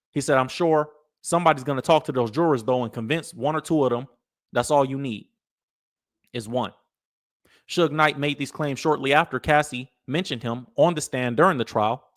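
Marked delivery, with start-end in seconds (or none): none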